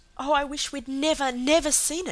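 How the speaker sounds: loud, high exclaiming outburst, crying out. Narrator reading a child's line after seeing a picture, crying out. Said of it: "cried Cecily".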